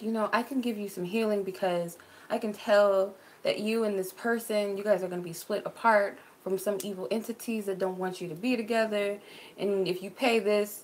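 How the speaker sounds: ordinary delivery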